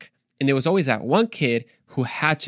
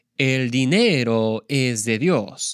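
Spanish dub translator's voice-over. Showing how the man translating a teaching into spanish talked, imitating a spanish dubbing voice. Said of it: "I can kind of imitate it pretty well".

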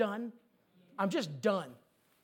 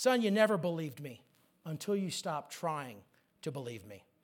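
very sweet tone, lower pitch; 5 semitones lower than usual. Retelling what God said to him, very sweetly. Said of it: "God said to him very sweetly".

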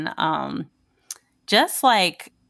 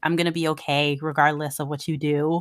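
ordinary talk

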